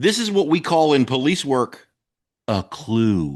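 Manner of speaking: put-on patronizing, condescending tone, words stretched long. Quoting the cop father's saying, the speaker imitates him being condescending. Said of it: "very condescendingly".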